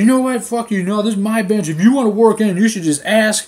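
loud, high, confrontational, defensive outburst. Retelling a man who got in the speaker's face over a bench, imitating someone getting defensive. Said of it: "he fucking starts getting all defensive".

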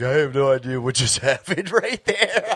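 words broken up by giggles and laughing. Recounting a phone call from a guy after one sip of beer, retelling giggling talk. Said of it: "He called me all giggling like".

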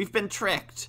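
put-on old man voice, high, angry cry. The grandfather realises Raven has fooled him, angry cry. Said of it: "the angry old man".

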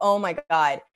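put-on, mock crying. Retelling covering face during a painful procedure: imitating own past crying. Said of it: "crying, just being like".

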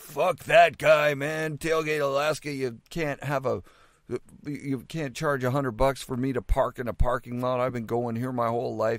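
angry, fed-up, aggrieved, upset griping rant. Retelling what a friend said about the parking fee: imitating someone angry and upset. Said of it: "he just sounded really angry and upset".

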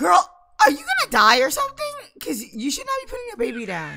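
shrill, high, swooping, rapid, excited screaming. Streamer talking to a game character, screaming. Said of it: "I'm gonna start screaming. I already have".

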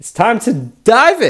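high, loud, eager, determined voice.

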